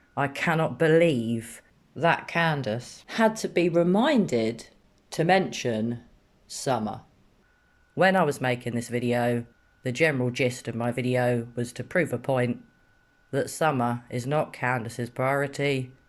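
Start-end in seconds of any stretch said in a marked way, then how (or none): 0.2-7.0 angry voice trembling and shaking with fury. Video maker reacts to a mother needing reminding about her missing daughter, angry, shaking voice. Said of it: "I'm actually shaking. I'm so angry".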